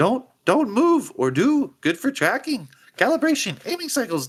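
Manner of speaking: very high, swooping, barely coherent babbling rant. Storyteller voices a woman who slams a lever on a machine, barely coherent ranting. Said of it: "she's wild eyed and she's like barely coherent".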